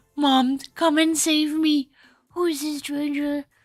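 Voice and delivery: very high, loud, shrill silly dog voice. Meeting someone's dog and voicing the dog's thoughts in a weird dog voice. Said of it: "I'm giving weird voices to your dogs".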